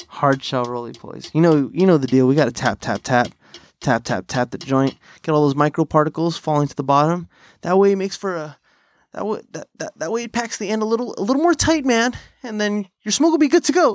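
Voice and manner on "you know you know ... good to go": stumbling spokesman sales rep patter. Showing how to pack a joint: impression of Josh from Raw Papers. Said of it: "That was my impression of Josh from, um, from Raw Papers".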